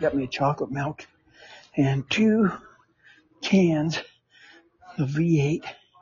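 breathless, halting, panting and huffing between words. After about ten steps on stiff legs, the speaker talks while huffing and puffing. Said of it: "you can hear me huffing and puffing".

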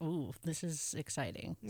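ordinary talk

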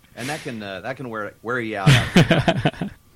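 ordinary talk, nothing marked

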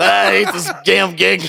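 drawn out, rough and creaky voice. Joking about a tubby, out-of-breath Sonic: Krusty the Clown voice. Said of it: "sounding more like Krusty the Clown".

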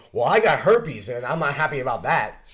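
sudden, loud, high, booming shout. Retelling a line an actor yelled in an action movie: imitating someone yelling. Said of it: "he just yelled".

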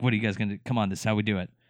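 put-on playful teasing tone. Retelling a film scene where a boxing coach goads kids: imitating a joking taunt. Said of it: "he's just joking the whole time".

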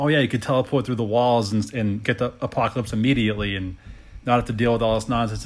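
ordinary talk

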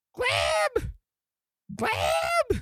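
very high, mild call. A game master voices a character running for the door: shouting down a hallway. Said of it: "you hear him shouting".

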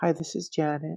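very quiet, soft voice. Retelling a phone call from Janet, imitating Janet's very quiet voice. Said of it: "very quiet".

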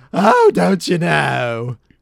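very loud, high, swooping, with "know" stretched out. Talking about where a cartoon voice came from, doing an Ed Wynn impression. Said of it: "it's kind of Ed Wynn is like".

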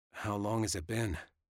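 ordinary delivery

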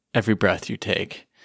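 normal talking voice

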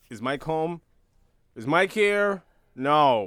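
loud, mock dry, deadpan delivery. Speaker quotes a show character talking to Dustin, imitating a deadpan delivery. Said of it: "he plays it so deadpan too".

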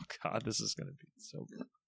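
soft, unvoiced whisper full of dread.

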